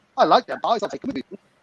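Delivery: ordinary delivery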